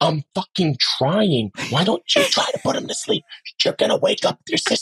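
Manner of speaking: furious, high-pitched angry whispered arguing. Showing what an angry whispered argument sounds like: whisper fighting. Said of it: "so that whisper fighting is".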